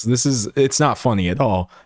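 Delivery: ordinary delivery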